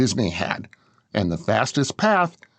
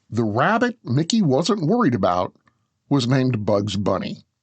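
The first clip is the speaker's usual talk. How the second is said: ordinary talk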